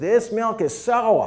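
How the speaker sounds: put-on very high, loud, slow, poor New England accent. Retelling a woman complaining about milk at a dairy, in a bad new england accent. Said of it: "that was a New England accent".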